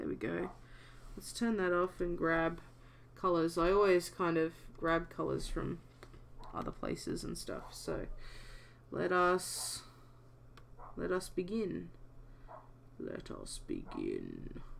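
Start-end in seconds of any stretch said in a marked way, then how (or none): 11.0-14.6 slow, drawn-out, ominous whisper. Starting a drawing session, the speaker announces the beginning in an ominous voice. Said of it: "I always like those ominous sounding voices".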